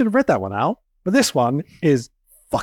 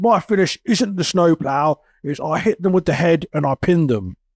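put-on London cockney accent in a geezer style. Retelling wrestling advice from Al Snow, imitating him as a cockney geezer. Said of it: "He talks like a cockney geezer".

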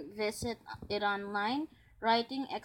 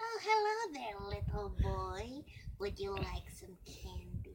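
put-on witch voice; 5 dB quieter than usual. Responding as a resident to a writing prompt about a missing child, witch voice. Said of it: "I'm a resident and I'm a witch".

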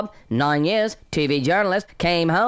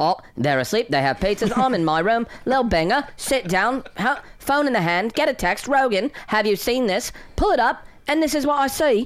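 storytelling delivery in a put-on British accent; 4 semitones higher than usual. Retelling getting a text and pulling up a video: British accent. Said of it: "That's a better British accent".

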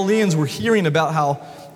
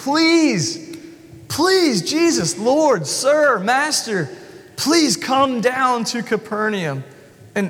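high, drawn-out, repeated pleading and begging; 6 semitones higher than usual. Speaker describing an official following Jesus around, imitating someone begging.

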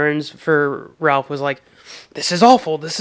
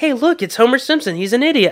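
high-pitched, scornful, ridiculing jeer; 8 semitones higher than usual. Retelling a cartoon scene where the character mocks Homer: Frank voice. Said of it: "Frank was like".

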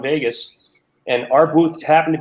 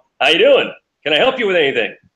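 big theatrical stage voice, projecting to carry far; 3 semitones higher than usual. Retelling calling out to two men in the booth from far away, theater voice. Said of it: "I put on the theater voice".

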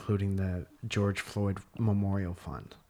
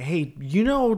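put-on screaming at full volume, higher and louder; 10 semitones higher, 9 dB louder than usual. Retelling an ad where a woman dressed as a lumberjack screams: imitating someone screaming loudly. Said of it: "she's just screaming at the top of her lungs".

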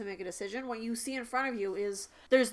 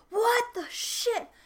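very high, startled, shocked outburst; 13 semitones higher, 4 dB louder than usual. Voicing stunned people after a roof caves in: surprised exclamation. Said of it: "they're just surprised that they're alive".

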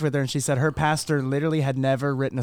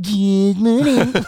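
mocking put-on voice, higher pitched; 7 semitones higher, 7 dB louder than usual. Telling the audience how Tanner mocks the speaker's greeting, Tanner's mocking imitation. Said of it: "Tanner mocks me and goes".

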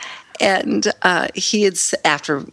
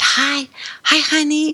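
put-on whisper, much higher; 10 semitones higher than usual. Retelling how a man came in and greeted them in the hospital, whispered. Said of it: "he whispered".

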